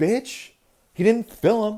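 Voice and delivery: very high, very loud, shrill, sassy belting. Acting out Jesus ordering the administration to free caged kids: sassy Jesus voice. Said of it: "I like a sassy Jesus".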